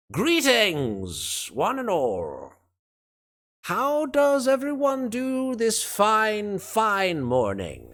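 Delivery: rather grand, slightly nasal, very high, drawn-out voice. A storyteller voices a character revealed in a doorway; grand, somewhat nasal voice. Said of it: "in a sort of rather grand, although somewhat nasal voice".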